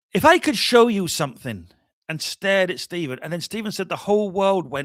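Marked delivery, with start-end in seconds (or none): 0.1-1.7 put-on poorly done, loud, swooping, sing-song Scottish accent. Retelling how Laing stared at Stephen and spoke: bad R.D. Laing impression, Scottish accent. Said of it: "I'm gonna do a very bad impression here".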